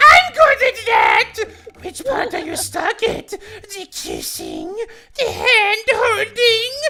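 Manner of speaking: very high, shrill, loud goblin voice, wildly swinging pitch. Playing William answering a visitor: sweaty goblin voice as William. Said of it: "I do the best sweaty goblin".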